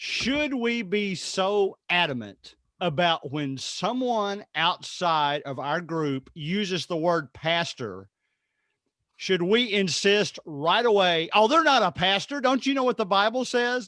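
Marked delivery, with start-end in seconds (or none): 11.3-13.9 mock snide, holier-than-thou sarcasm, raised and high. Acting out a churchgoer correcting an outsider: imitating a sarcastic scold. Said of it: "I'm being sarcastic".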